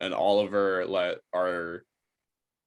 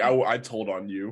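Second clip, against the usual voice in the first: usual speaking voice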